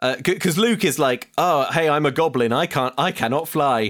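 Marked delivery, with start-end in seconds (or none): none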